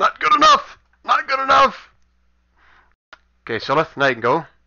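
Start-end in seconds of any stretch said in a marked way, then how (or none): 0.0-1.9 high, loud little scream. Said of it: "you see him kinda scream a little bit".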